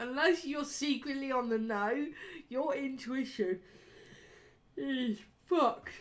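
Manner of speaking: speaking through a yawn. Talking to a mate while recording on camera, yawning while talking. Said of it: "again, with the fucking yawning".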